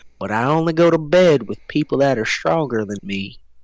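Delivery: whispered speech. In a game scene, a woman offered a drink answers the buyer: whispering in someone's ear. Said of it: "she whispers in your ear".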